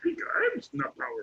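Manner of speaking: breathy little creature voice, like a tiny sage. Explaining a math idea with a Star Wars comparison: Yoda voice. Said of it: "kinda like Yoda".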